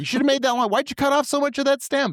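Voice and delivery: put-on yelling. Imagining the father criticizing the arrangement: imitating someone yelling. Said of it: "He's gonna yell at me".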